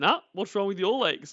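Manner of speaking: acted cheeky, insolent, dismissive, can't-be-bothered tone. Acting out the husband's imagined reply to his wife: imitating an insolent husband. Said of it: "little insolent little asshole".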